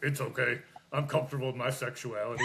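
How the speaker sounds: ordinary talk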